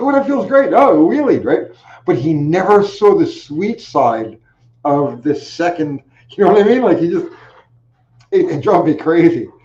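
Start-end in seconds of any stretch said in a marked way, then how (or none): 0.0-1.4 mock giggling thrill, very high pitch. Retelling how a rider reacted while giving the bike throttle: imitating a rider giggling. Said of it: "he starts giggling".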